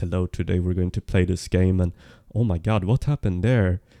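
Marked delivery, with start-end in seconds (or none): 0.0-1.8 flat, expressionless, monotone robot voice. Showing how they used to sound, in a monotone, robotic delivery. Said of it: "I used to sound like this. ... you sound monotone".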